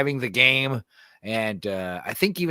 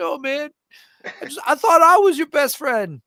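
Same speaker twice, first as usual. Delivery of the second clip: put-on very high, loud, tearful crying wail; 6 dB louder than usual. Retelling a movie scene where the character cries about his best friend: imitating Ari Spears crying. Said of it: "Ari Spears is crying".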